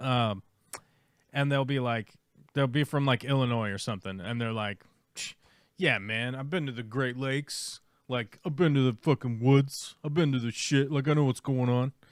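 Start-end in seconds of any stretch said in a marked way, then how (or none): 5.2-11.9 mocking, imitated know-it-all voice. Making fun of an imaginary visitor from Illinois: mocking imitation of a know-it-all visitor. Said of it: "I'm making fun of an imaginary person".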